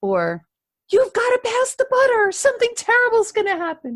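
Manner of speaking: urgent pressing voice. Speaker showing the wrong way to give someone information: urgent pressuring demand. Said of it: "It shouldn't sound like".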